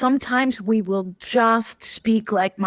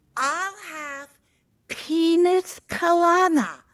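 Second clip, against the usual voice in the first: full-voiced, pitched-up, out-loud delivery; 8 semitones higher than usual. Retelling the speaker's mother ordering from the waiter at the table: in full voice. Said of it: "says in full voice".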